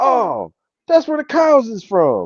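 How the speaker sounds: hyped, very high, loud radio-host DJ holler. Retelling a radio call-in, imitating the yelling host's reply to a caller. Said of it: "yelling on the radio".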